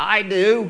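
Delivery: deep demonic voice. Retelling an objection heard at a wedding: imitating a demonic voice. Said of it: "It was a demonic voice in the back saying".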